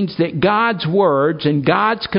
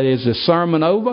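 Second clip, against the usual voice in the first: plain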